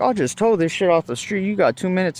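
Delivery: threatening tough-guy voice. Retelling an argument over towing, imitating the other man. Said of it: "He's like".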